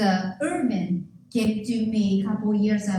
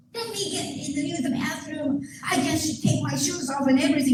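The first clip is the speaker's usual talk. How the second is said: put-on loud screaming, shouted voice; 6 semitones higher than usual. Retelling a man outside asking to use the bathroom: imitating a man shouting. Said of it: "So the guy was shouting".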